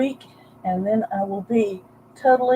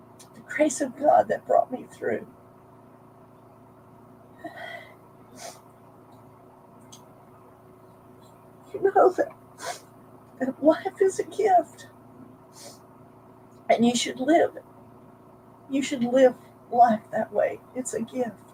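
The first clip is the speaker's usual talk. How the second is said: tearful, choked-up crying while speaking; 4 semitones higher, 6 dB quieter than usual. Speaker sharing a personal story, apologizing afterward for the tears; tearful. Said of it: "sorry for the tears".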